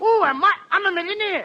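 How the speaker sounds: high-pitched, yelping cry. Bursting in with news of being rich: yelling. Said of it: "What's this all yelling all about?".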